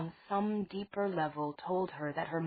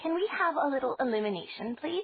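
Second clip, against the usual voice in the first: false, overly polite, pitched-up put-on courtesy; 8 semitones higher, 4 dB louder than usual. A character, led into a dim room by ogres, speaks up in a false, polite voice. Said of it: "in a false, polite voice".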